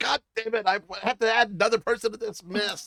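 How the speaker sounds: high, loud, squealing, grumbling, fed-up gremlin voice. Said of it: "Little gremlin inside the sitting stone is like".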